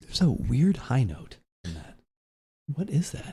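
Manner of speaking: soft, hushed, whispered aside. Describing a tasting note to another speaker, whispering. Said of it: "Why are you whispering?".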